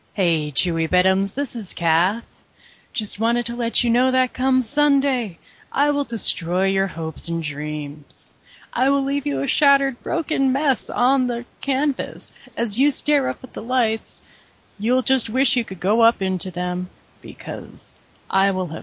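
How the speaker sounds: calm, soothing, gentle voice. Asked to cut a promo on Chewy Bittums, she speaks: soothing voicemail voice. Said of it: "In your soothing voicemail voice".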